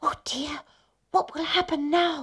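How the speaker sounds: frightened whispering. The smallest piggy, scared of the wolf coming down the chimney, in a scared whisper. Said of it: "whispered the smallest piggy, who was really scared".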